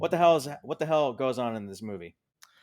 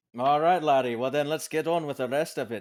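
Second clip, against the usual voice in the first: fake brogue that sounds Irish; 3 semitones higher than usual. A host, having just claimed to be partly Scottish, in an Irish-sounding put-on accent. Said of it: "that sounded Irish".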